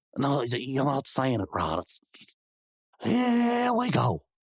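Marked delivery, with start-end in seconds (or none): 3.0-4.2 "here we go" said drawn-out. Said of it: "You gotta say it like that".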